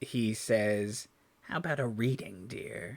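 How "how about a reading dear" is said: put-on soft, croaky, raspy elderly woman's voice. A speaker retells a man's line, done in a raspy old woman's voice. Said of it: "in a raspy old woman's voice".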